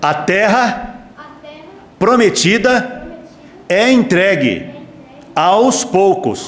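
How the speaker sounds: very slow, deliberate preacher cadence. Speaker stands to demonstrate how to preach, in loud, slow preacher voice. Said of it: "fala bem alto ... bem pausado agora ... com voz de pastor".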